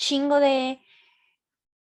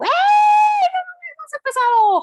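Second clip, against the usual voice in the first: high, loud yell. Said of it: "me grita".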